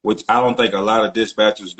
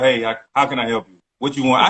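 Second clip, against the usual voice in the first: put-on rude, dismissive tone; 2 semitones higher than usual. Complaining about rude brokers on the phone, imitating a rude broker. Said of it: "a lot of brokers just be like".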